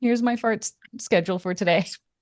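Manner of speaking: plain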